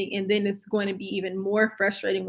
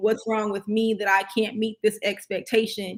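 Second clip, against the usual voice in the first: ordinary talk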